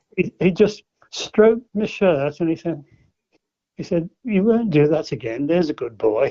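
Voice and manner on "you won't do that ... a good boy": put-on poshest, very plummy accent, laid on thick. Retelling what a man said after lifting him by the elbows: imitating a very posh voice. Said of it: "poshest voice of a football you've ever heard".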